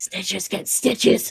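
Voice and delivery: quiet, secretive whispering. A character whispers to another while a lady looks elsewhere, whispering. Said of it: "just whisper".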